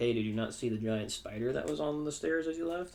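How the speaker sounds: normal talking voice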